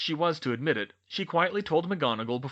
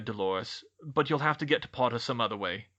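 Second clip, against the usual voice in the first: plain reading voice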